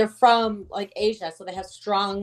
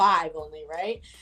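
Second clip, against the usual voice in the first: ordinary talk, nothing marked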